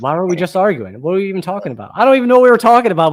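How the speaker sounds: rushed, rising yell, losing the thread. Acting out an argument whose cause was forgotten, imitating someone yelling. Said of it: "but I'm still yelling".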